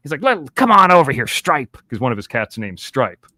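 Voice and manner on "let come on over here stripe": put-on high bad-little-kid voice. Describing a man who talks to his cat Stripe, Kyle the Coyote voice. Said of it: "the bad little kid".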